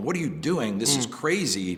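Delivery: plain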